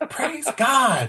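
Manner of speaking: mock, very high, all-out, full-lung toddler shriek. Retelling what the son does after potty training: imitating a child screaming. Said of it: "he screams at the top of his lungs".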